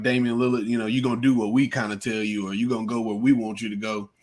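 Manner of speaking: normal talking voice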